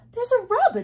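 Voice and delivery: very high, loud cry. The mop, pointing at a bird, speaks to Jody and Dill; crying out. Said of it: "cried the mop".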